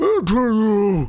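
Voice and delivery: speaking with mouth still full. Narrator voicing a character who nods to you, speaking with mouth full. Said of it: "Mouth still full".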